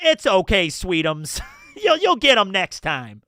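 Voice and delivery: poorly done put-on New Jersey accent. Admitting they are bad at the accent, trying it anyway: bad Jersey accent. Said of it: "I suck at a Jersey accent. It's like".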